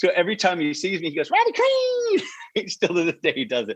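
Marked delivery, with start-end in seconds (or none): 1.3-2.7 very high-pitched voice pushed way up. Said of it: "he's got that high voice".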